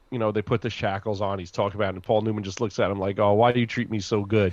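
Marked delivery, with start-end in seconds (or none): none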